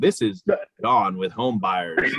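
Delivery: mock scared, nervous, robotic voice. Imitating another cold caller who sounds scared or robotic. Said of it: "He sounds so scared or like a robot".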